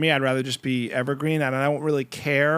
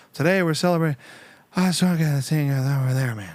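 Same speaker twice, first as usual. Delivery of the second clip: put-on voice of an old politician. Explaining how the voice trails off: Joe Biden impression. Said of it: "It's kinda like".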